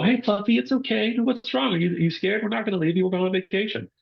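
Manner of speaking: acted, very high, quick, gentle, reassuring soothing voice. Speaker acts out an owner talking to their shaking dog, imitating a soft reassuring voice. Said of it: "the dog takes that soft voice".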